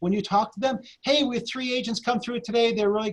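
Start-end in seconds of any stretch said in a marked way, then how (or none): 1.0-3.1 enthusiastic, excited, upbeat delivery. Showing how to update someone about agents viewing their house, upbeat and excited. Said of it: "Always sound excited".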